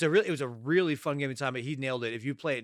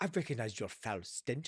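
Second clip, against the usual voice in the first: put-on British accent, quieter; 8 dB quieter than usual. Quoting Leia's line from the scene: Leia's slipping British accent. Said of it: "She slips in and out of her British accent".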